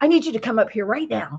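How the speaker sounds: play-acted, tense, worried, anxious, insistent tone. Retelling a neighbor's phone call summoning the speaker upstairs: imitating an anxious voice. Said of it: "talking in an anxious voice already".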